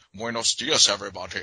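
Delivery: put-on heavy Scottish accent. Mocking an actor playing a Spaniard with no Spanish accent, Sean Connery Scottish accent. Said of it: "just Scottish as fuck".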